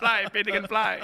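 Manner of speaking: loud, strange, put-on Spanish accent. Quoting the line a movie character learned to say: imitating Al Pacino's weird Spanish accent. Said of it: "son accent espagnol weird".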